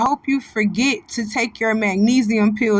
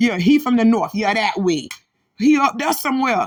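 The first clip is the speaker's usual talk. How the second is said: normal talking voice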